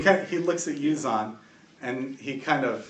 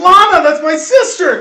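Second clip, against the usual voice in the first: shrill, very high, very loud, drawn-out cry; 17 dB louder than usual. Voicing a sergeant who sees his sister held prisoner: crying out. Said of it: "you hear Sergeant Murkoff cry".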